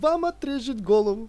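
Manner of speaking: loud, high, gleeful, joyful proclaiming tone. A stranger, after muttering to himself, announces to Berlioz a loud joyful announcement. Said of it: "громко радостно объявил".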